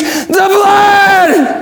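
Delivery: inhuman high screech, the word "blood" stretched long. Speaker retelling what this thing screeched: retold screech. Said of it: "this thing screeched".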